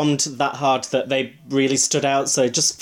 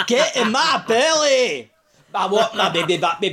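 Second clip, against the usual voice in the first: put-on heavy Scottish accent, much higher; 8 semitones higher than usual. Explaining whom a person's voice reminds you of, doing a Fat Bastard impression. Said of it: "it's a really thick Scottish accent".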